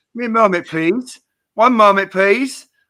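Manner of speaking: put-on British accent. Retelling what he said to a man on the subway, imitating a British accent. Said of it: "in a British accent".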